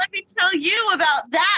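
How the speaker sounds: high, laughing, mock scolding tone. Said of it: "Jessica was like".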